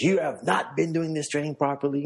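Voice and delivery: high, angry outburst. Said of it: "he lost it on them".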